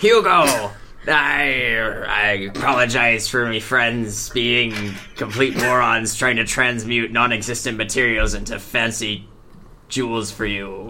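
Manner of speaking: put-on pirate character voice. A role-playing game player speaks in character to hugo, pirate voice. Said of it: "I have to do the pirate voice".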